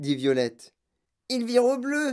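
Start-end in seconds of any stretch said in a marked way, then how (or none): 1.3-2.1 high-pitched yell, shouted out in alarm. A mother speaks about her daughter's nose, yelling. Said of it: "hurla Madame Beauregard".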